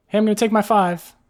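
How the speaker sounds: very high, very loud yell. Describing a woman calling back across the room, retelling a yell across the room. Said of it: "and then yells back to Captain Noodles".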